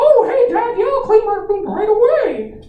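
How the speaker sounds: loud, swooping, high-pitched squeak. Recalling how they answered a parent, the speaker does a Mickey Mouse voice. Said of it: "I do it in like a Mickey Mouse voice".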